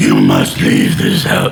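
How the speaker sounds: very deep, rough, creaky, rasping voice. Showing off another character voice, doing a Vecna voice. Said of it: "I can also do the Vecna voice".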